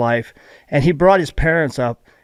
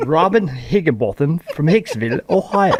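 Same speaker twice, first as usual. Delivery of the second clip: put-on British accent; 2 semitones higher than usual. Repeating his name and hometown when asked again: British accent. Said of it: "Everything sounds so much better in a British accent".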